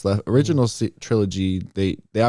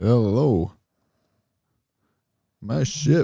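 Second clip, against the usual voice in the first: casual put-on suave smuggler voice, higher pitch; 4 semitones higher than usual. Joining in on the impression of Lando: casual Lando voice. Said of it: "he kinda does this sort of casual".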